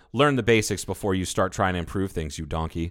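ordinary delivery

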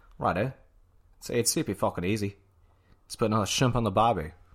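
put-on Australian accent. Demonstrating for someone who says they can't do it: australian accent. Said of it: "if it's like an Australian accent".

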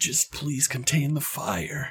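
hushed, soft voice. Narrating a player character raising a shield, hushed tone. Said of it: "and in a hushed tone you say".

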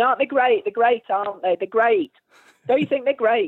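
mock older man cheering. The speaker retells an older man clapping at their gig, imitating him cheering the band. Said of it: "he was clapping and going".

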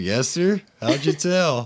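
high-pitched, put-on Texas accent. Retelling what someone said on a fishing trip, in a put-on Texas accent. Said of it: "just like Texas voice".

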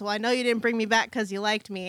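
usual speaking voice

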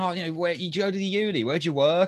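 high, pushy shout. Retelling a man calling after her and her friends as they walked away, retelling a man shouting. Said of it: "he just started shouting".

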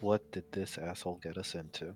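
muttering under breath. A player speaking as their character about a companion, muttering under the breath. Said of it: "I just mutter under my breath".

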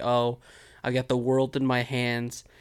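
ordinary talk

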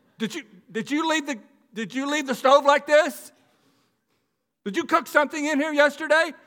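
mock shrill, very high, very loud, upset tone. Showing how Sherry talks to him when she is upset, imitating upset Sherry. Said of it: "if sherry's upset with me".

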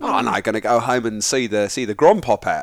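put-on casual, loose, tossed-off Australian accent.

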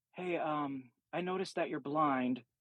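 hushed half-whisper under the breath, like a stage whisper. Retelling how a stranger approached in a store: imitating someone half-whispering. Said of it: "He's kinda whispering".

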